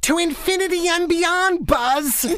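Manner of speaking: very high, drawn-out, high-energy toy hero voice. Showing a character voice they did: higher pitch, higher energy. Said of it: "it's kind of like just a higher pitch, you know, just a higher energy. It's like this".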